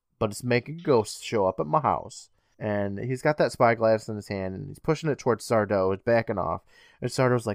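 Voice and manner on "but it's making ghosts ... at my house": ordinary delivery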